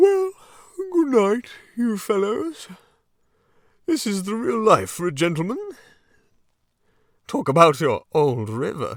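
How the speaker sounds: drowsy, sleepy and very high-pitched voice. Reading a character's goodnight to his fellows from his bunk, sleepy. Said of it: "sleepily said".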